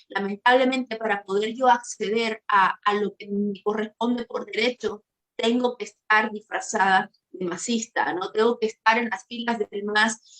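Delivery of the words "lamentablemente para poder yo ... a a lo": plain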